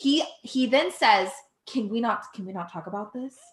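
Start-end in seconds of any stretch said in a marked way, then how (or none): 1.7-3.3 put-on whisper, much quieter. Retelling how a man dodged a woman's question, speaker is retelling his whisper. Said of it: "He whispers it whispers it".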